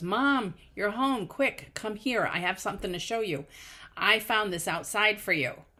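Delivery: excited put-on child voice, yelling. Retelling how a daughter greeted her at the door: imitating a daughter yelling. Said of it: "my daughter yells".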